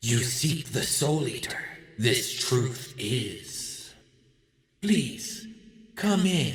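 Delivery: slow, strange, otherworldly creature voice. Voicing a creature that invites the players into the room: creature voice. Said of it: "you hear one of these creatures say".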